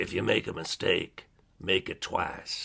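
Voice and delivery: mock rough, gravelly voice. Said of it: "he had this gravelly voice".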